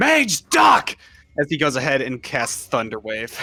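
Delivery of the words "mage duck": screamed, much higher and louder. In a fantasy game scene, Rowan warns the mage mid-spell, screaming a warning. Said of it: "he just screams".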